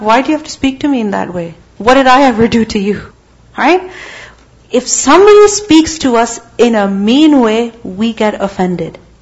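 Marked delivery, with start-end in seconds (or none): none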